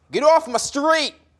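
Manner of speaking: street-tough, aggressive attack pitched very high. Coaching how to say New York phrases: tough and aggressive. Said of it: "Say it aggressive, like".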